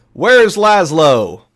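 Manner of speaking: very loud, high yell projected across a room. Voicing a character calling for someone: yelling to the room. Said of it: "sort of yelling to the room".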